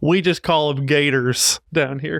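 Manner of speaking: put-on laid-on-thick, really strong southern US accent. Imagining someone answering a question about freshwater mermaids, in a really southern voice. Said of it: "I just hear this like really southern voice being like".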